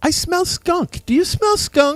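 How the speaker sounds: put-on laid-on-thick British accent, very high pitch. Retelling what a lady down the hall said, in a very british accent. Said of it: "in a very very British accent".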